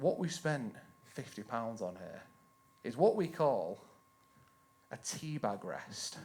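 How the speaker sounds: play-acted very low, bone-dry deadpan delivery. Retelling the partner's straight-faced answer about a purchase: imitating a deadpan reply. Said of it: "And with a straight face, she goes".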